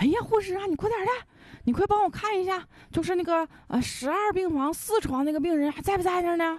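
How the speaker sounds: very high, frantic, panicked yelling. A caller phones a hospital front desk asking about a patient, panicked shouting. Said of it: "那人就喊说的".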